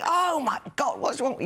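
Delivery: very high, exasperated screaming outburst. Retelling shouting at the radio or tv: imitating own screaming. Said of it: "I'm literally screaming".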